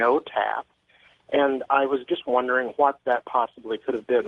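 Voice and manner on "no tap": machine-like robotic computerized voice. Retelling what a phone-tap check line said when called, in a computerized voice. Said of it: "It said in a computerized voice".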